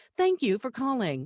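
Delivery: polished, professional customer-service phone voice. Asked for an example of their two phone voices, phone greeting voice. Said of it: "that kind of voice".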